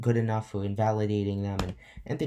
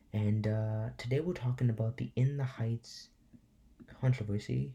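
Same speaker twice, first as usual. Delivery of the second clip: soft, hushed, quiet late-night voice; 4 dB quieter than usual. YouTuber opening a late-night video for viewers; talking low. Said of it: "I'm talking low because it's super late".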